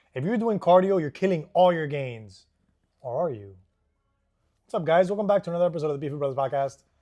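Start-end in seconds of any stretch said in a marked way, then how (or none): 5.1-6.8 very fast, rattled-off delivery. Podcast host opening a new episode, saying the show name very fast. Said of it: "I like to say that as fast as I can".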